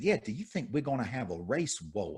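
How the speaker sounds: put-on thick Southern accent laid on heavy, soft. Retelling what a woman asked him a second time, heavy Southern accent. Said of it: "heavy Southern accent".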